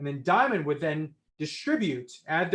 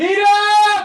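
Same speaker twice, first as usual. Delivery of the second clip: much higher and louder yell; 13 dB louder than usual. Covering the phone mic and calling out for P-Dog, loud yell. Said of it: "I apologize if that was loud".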